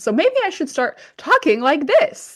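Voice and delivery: put-on lively, energetic, high, swooping animated delivery. Joking about sounding monotone, trying a mock high-energy animated voice. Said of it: "I need to bring more energy".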